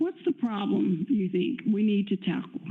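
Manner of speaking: plain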